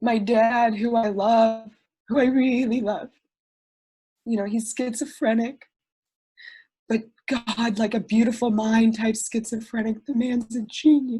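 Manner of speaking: choked up, tearful, close to tears. Speaker telling a personal story to people on Zoom, close to tears. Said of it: "I'm just gonna cry this whole time".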